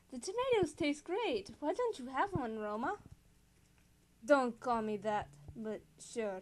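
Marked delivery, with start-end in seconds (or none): 0.1-2.9 put-on Spanish accent throughout. Voicing a character talking to another character, in a Spanish accent. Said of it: "can I do a Spanish accent?".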